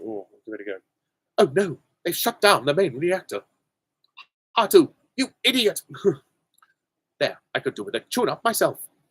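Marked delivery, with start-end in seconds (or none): 1.4-8.8 high-pitched, mechanical robot voice. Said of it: "of R two D two or C three P O".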